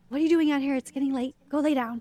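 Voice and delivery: mock, really sharp, cutting delivery. Retelling own earlier words to her, imitating a sharp tone. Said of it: "And I said it really sharp".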